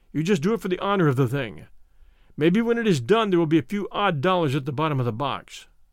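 ordinary delivery

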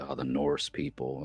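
put-on voice full of dread, low and hushed. Imitating how people talk about the norse people, with mock dread. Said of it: "they say it with this like dread in their voice".

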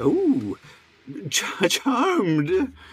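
silly put-on goofy voice, high and swooping. Narrating a scene and voicing the tiefling at the desk, goofy put-on voice. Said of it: "that goofy voice I was doing".

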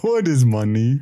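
talking in a put-on bear voice. Asked to do the bear again, answering in a bear voice. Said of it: "Can you do the bear again?".

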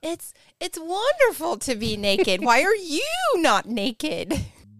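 loud, happy, free-spirited, carefree exclaiming. Describing an imagined scene to the others, acting out carefree joy. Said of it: "I'm just happy and free".

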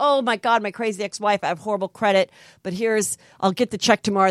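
ordinary talk, nothing marked

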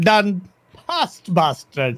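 put-on accent sounding Indian. Acting out how the Saudis reacted, in a put-on accent sounding Indian. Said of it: "Saudi sounded like they're from India".

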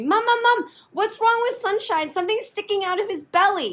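frantic, panicked shriek, very high. Retelling mom's story of a child running downstairs to her, acting out screaming. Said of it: "you're screaming at me".

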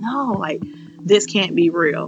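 acted-out, fake crying and sobbing. Retelling seeing a positive pregnancy test in the bathroom: imitating own past crying. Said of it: "I started crying like".

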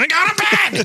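put-on mom voice yelling, very high. Retelling a mom yelling from another room: imitating a mom yelling. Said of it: "your mom yell at you from the room".

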